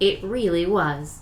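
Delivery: loud, announcing narrator voice. Answering a remark that the Super Bowl will be lit, narrator voice. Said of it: "Narrator voice".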